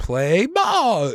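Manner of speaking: loud, high, squeaky voice that cracks. Explaining their voice cracked in class, squeaky Ham from The Sandlot voice. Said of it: "it starts squeaking like ham in The Sandlot".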